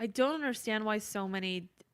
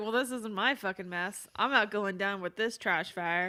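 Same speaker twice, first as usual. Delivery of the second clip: ordinary delivery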